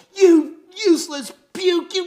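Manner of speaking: piercing, shrill, full-volume screaming. Retelling how a huge cop came up screaming at him: imitating a cop screaming. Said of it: "start screaming at me".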